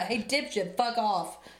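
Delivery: put-on regular New York guy accent. Discussing how an AI sounds like a regular guy, doing a New York accent. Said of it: "Like a New York accent".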